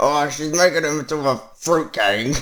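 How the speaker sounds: bad put-on gruff soldier voice. Joking about a missing character, doing an awful impression of Wrecker. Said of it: "That's my awful impression of Wrecker".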